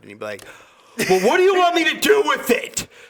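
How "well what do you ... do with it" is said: very high, loud, angry freak-out yelling. Imagining a coworker snapping at a diner who refuses food: imitating someone yelling. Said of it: "seen you yell".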